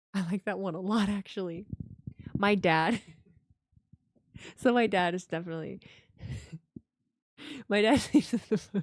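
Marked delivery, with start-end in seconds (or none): 4.5-8.8 words broken up by laughing throughout. Talking about a dad's sleep habits, laughing while talking. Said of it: "I'm sorry, I'm laughing".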